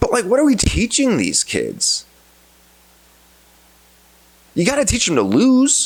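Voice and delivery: angry, very high-pitched, swooping rant. Speaker ranting into a microphone, admitting to being angry. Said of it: "Sorry, I'm now I'm angry".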